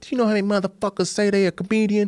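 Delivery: angry scolding. Retelling a doorman named Chewy chewing him out: imitating an angry scolding. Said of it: "he chewed me out".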